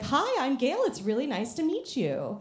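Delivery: put-on polite, sing-song customer service voice. Retelling meeting a newly hired cook at work: put-on customer service voice. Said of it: "the customer service voice doesn't come off".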